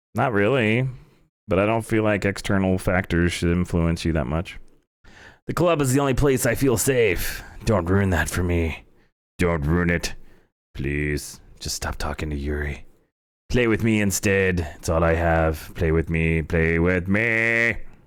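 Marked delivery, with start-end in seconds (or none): 5.5-17.8 low, eerie, unsettling horror-game style creepy voice. Voicing a character speaking to the listener: creepy voice. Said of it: "Creepy voice".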